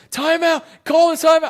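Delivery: angry screaming, very loud, high and shrill. Retelling watching the game at dinner: imitating his own screaming.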